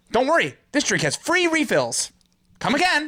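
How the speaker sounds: stiff robot delivery, pitched way up. Imitating the popcorn server who talked oddly: imitating a robotic voice. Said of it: "He's a robot".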